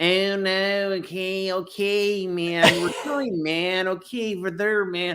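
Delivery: fake American accent. Describing how someone imitates accents, then doing his American: fake American accent. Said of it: "When he does American".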